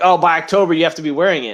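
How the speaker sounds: plain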